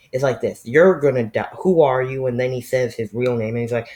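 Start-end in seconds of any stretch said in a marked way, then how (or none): none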